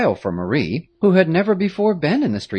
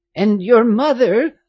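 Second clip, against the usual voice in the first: high, sudden exclaiming cry; 8 semitones higher, 4 dB louder than usual. Narrator voicing a woman who nursed the girl's mother, asking after her, exclaiming. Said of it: "Louise Moulin exclaimed".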